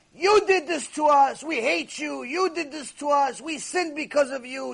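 play-acted, high-pitched, shouted accusing yell. Retelling how millions of neshamot yelled at her, imitating their yelling. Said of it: "Millions of neshamot yelling at her".

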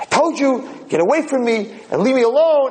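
play-acted, very high, screaming outburst. Retelling a quarrel, voicing the crying man's reply, retelling a yell. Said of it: "Why are you screaming and yelling at me?".

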